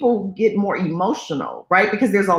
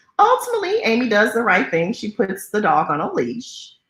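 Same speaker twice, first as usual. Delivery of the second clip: ordinary talk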